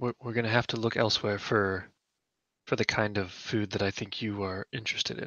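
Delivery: voice dropped low and hushed at the end. In a role-play scene, a character replies to another, lowered voice. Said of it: "she lowers her voice for that last part".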